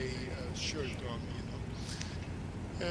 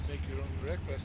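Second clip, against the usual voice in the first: normal talking voice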